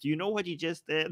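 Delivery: mock stunned, aghast, shocked tone. Retelling what the older guy says in a video: imitating someone shocked. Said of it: "oh, shocked".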